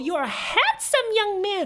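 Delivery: very high, squeaky cartoon voice. Petting the dog and talking to him, Mickey Mouse voice. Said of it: "make my voice sound like Mickey Mouse".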